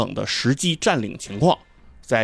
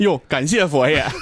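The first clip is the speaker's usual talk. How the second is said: thrilled, eager, excited, drawn-out delivery; 4 semitones higher than usual. Retelling another speaker's reply to a question: imitating an excited reply. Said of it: "特别兴奋地说".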